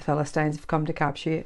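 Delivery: ordinary delivery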